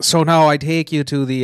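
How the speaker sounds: put-on Irish accent. Trying out accents with another speaker, who calls this one Irish, in an Irish accent. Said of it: "that's Irish".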